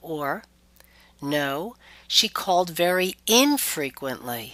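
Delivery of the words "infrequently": emphasis on in- of infrequently. Example of stressing a prefix to emphasize a point: stressed prefix in of infrequently. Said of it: "we might stress a prefix to emphasize a point".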